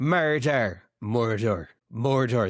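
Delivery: murder pronounced in an Irish accent. Comparing accents, showing how the irish say a word: irish accent. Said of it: "Murder in Ireland".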